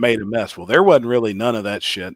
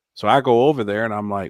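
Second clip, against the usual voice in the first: ordinary talk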